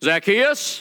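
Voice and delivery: put-on hollering, loud and high. Retelling a story, calling up to a man in a tree: imitating a holler. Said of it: "Jesus hollers at him".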